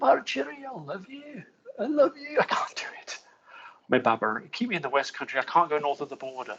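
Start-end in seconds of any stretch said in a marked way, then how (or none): 0.0-2.4 Glasgow accent, very high pitch. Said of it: "that was me kind of doing [name], [name]".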